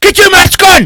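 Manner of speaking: put-on very high, shouted voice in a Scottish accent. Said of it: "I did Scottish then, sorry".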